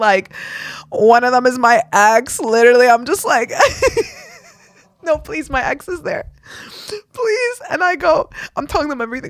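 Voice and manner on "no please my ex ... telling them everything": high, tearful, crying begging. Recounting a panic attack, the speaker retells a crying plea. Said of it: "I'm crying to them".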